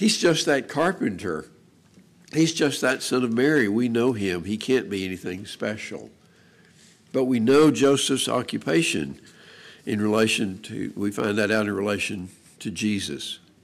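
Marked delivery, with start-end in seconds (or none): none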